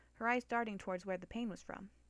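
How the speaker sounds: ordinary delivery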